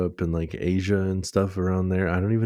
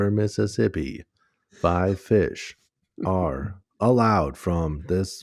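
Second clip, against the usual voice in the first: robotic weather-radio read-out with stresses all wrong. Speaker imitates the robot voice heard on weather broadcasts: robotic weather-radio voice. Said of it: "robot voice that comes through on the weather".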